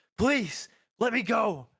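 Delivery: frantic, high-pitched, loud begging. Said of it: "he's looking kind of frantic".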